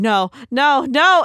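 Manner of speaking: acted-out panicked, freaking-out repeated no's, high and loud. Retelling a tense scene, imitating a character freaking out. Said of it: "and she's freaking out".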